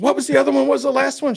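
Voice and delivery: very loud, high-pitched scream. Recalling a test result, retelling screaming at the technician. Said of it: "I'm screaming at the technician".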